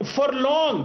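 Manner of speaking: long leaned on, stressed at the end.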